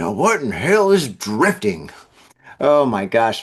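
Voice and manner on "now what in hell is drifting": put-on low old-person voice. Reading a news story and imagining how an old reader reacts: old person voice. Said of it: "imagine an old person being like".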